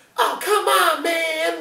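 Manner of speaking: put-on very high, very slow, drawn-out childish voice. Retelling the younger brother's line in the cab, imitating a kid-like voice. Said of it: "Like it just sounds like a kid".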